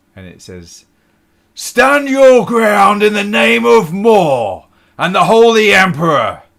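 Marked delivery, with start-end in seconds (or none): 1.5-6.3 very loud, high, booming shout. Narrating a scene, voicing a figure who shouts from the back of the hall: Carden's booming shout. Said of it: "a booming voice shouts out".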